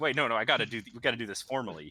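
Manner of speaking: eager, excited insistence, tripping and stumbling over words. Voicing a guild contact eager to make the contract formal: excited. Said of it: "He's, he's just so excited".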